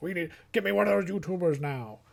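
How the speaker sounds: high, puffing studio executive voice, bossy. Acting out a film boss taking a big puff, imitating a puffing film boss. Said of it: "He takes a big puff. He's like".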